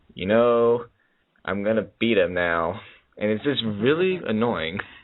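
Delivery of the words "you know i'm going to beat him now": low, flat, droning monotone. Mocking how a wrestler sounds on the mic: low monotone CM Punk voice. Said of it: "talks in his low monotone voice".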